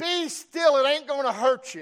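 very loud, high-pitched shouted yell. Retelling what Grandpa yelled at him in the boat: imitating Grandpa yelling. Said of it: "he yells".

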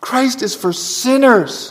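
put-on Scottish accent, preacher-like delivery. Preaching to the congregation, hearing John Murray in his ears: John Murray's Scottish accent. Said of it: "I have to say it with a Scottish accent".

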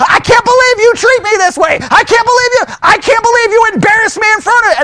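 mock heated, high, furious yelling rant. Acting out a spouse yelling after church: acting out angry yelling. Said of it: "we start yelling and screaming at someone".

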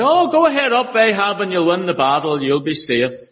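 funny put-on voice, high, loud, sarcastic swoops. Retelling the prophet's answer to the king, the speaker does Micaiah's put-on sarcastic voice. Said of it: "he must have said it with a funny voice".

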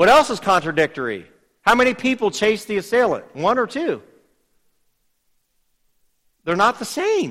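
mocking, sarcastic, high and sing-song. Going over contradictions between witness accounts with listeners, sarcastic. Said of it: "I'm being sarcastic if you're missing that".

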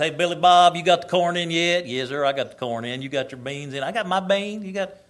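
put-on loud rural country accent. Recalling his teen years, the speaker acts out boys from school, imitating country boys. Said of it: "one day they're talking like this".

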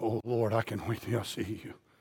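low, soft voice full of fearful dread.

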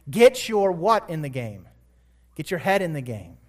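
normal talking voice

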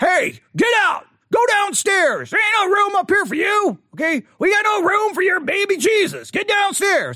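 put-on very high, swooping, cranky old-man voice. Acting out someone turning them away and sending them downstairs, put-on grumpy old man voice. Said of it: "I don't know why I'm using that kind of accent. Grumpy old man".

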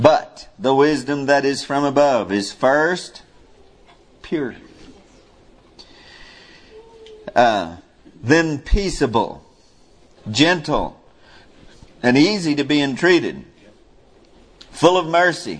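drawn-out, measured, very slow deliberate reading voice. Reading a passage aloud to listeners, deliberately slow reading. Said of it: "I'm reading slow on purpose".

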